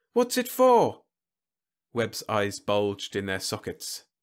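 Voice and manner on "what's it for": very high, shrill, piping voice. Whitlow, wearing earplugs, asks Webb about his creation in a high, piping voice. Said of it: "asked in a high, piping voice".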